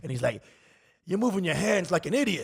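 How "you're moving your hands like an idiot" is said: put-on intense old man impression, pitched higher. Retelling an older actor's advice between takes: imitating an intense old man. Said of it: "the most intense, like, old man advice".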